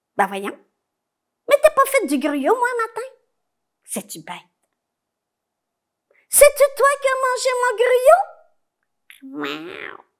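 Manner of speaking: put-on high, little old woman voice. A storyteller voices the little old woman as she arrives, speaking as the little old woman. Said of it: "la petite vieille arrive. / puis elle a regardé le chat en lui disant / la petite vieille arrive".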